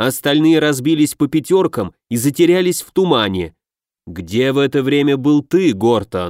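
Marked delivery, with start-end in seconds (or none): none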